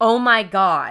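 a woman's loud screaming outcry. Retelling a call to a dispatcher, the speaker voices the shot woman: imitating a screaming woman. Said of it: "And she's screaming".

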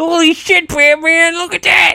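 very high overexcited yelp. Voicing Robin talking to Batman: overexcited Robin voice. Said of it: "his overexcited".

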